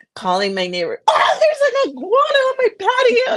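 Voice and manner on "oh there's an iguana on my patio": shrill, very high-pitched screaming. Retelling calling a neighbor after an iguana got stuck: retelling own scream. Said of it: "I'm screaming".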